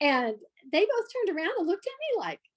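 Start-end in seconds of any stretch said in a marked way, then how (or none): none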